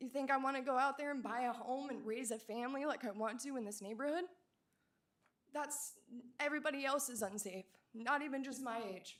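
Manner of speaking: heartfelt, upset voice with feeling welling up. Speaking about living in their neighborhood, a resident gets emotional. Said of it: "I'm getting emotional".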